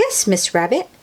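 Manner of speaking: ordinary talk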